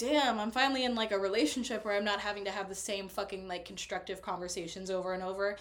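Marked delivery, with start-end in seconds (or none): none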